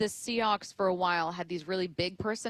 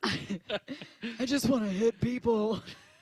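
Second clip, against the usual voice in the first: put-on low, rough voice; 3 semitones higher than usual. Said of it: "Do you need a lozenge?".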